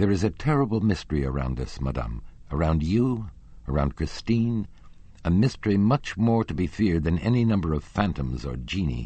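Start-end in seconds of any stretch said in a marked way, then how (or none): none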